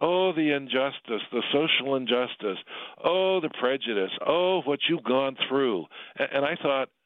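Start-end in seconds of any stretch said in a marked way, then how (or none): 0.0-5.9 put-on lamenting lady voice. Retelling what a sixty-year-old lady said while bowing down: imitating a lady lamenting injustice. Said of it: "She goes".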